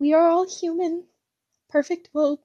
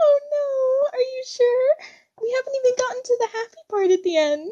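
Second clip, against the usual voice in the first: high-pitched squeaky helium voice, higher; 9 semitones higher than usual. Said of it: "It's like I'm on helium".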